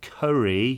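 very slow word, each syllable carefully stretched. Retelling a second failed try at ordering: imitating own even slower try. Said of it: "went even slower".

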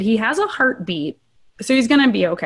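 ordinary talk, nothing marked

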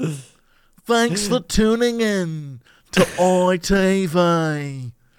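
put-on nasal British TV announcer voice. Mocking how british tv announcers sound, nasal british announcer voice. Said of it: "that does sound exactly like it".

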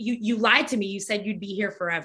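ordinary delivery

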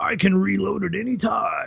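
squeaky, very high-pitched, rasping, creaky voice. Speaker retells a cartoon scene where Krang loses arms: Krang voice. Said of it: "in his best Krang voice".

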